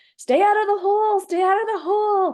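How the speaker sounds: shrill, very high, loud shouted yell. Recalling a river run, the speaker quotes the boat's steerer: retelling a yell. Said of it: "he's yelling at us like".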